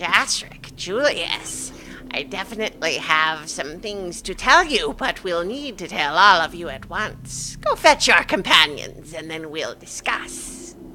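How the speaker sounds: cackling character voice. Narrator voices a seer speaking to two companions: cackling seer voice. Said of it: "as she kind of cackles".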